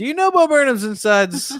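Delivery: high-pitched, loud, mocking shout.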